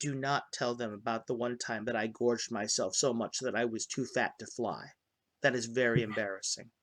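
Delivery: very quiet, low, hushed half-whisper. Voicing a character in a game who half-whispers to the players: half-whispering. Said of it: "she whispers to you".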